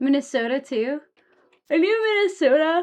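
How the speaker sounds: talking through yawns. Chatting with the group after little sleep, the tired speaker talks yawning. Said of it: "I can't stop yawning".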